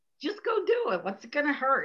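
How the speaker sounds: put-on swooping, sing-song elderly woman's voice. Talking about her inner critic, a woman voices her other inner voice: old lady voice. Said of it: "my old lady voice says".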